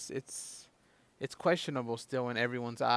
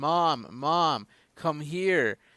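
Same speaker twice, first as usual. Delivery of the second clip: loud, drawn-out screaming; 3 semitones higher, 7 dB louder than usual. Retelling calling mom over after seeing breaking news: imitating own past scream. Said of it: "I screamed".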